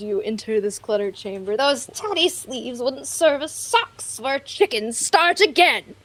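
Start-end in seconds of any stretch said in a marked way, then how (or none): 1.6-5.8 raspy, scratchy yelling voice. Narrating players entering a cluttered chamber and voicing the one who yells, scratchy yelling voice. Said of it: "A scratchy voice yells".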